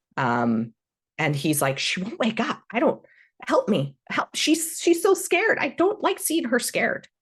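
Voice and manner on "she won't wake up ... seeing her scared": scared character voice, much higher, faster. The narrator voices Droop begging for help, terrified Droop voice. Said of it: "Droop looks at you terrified".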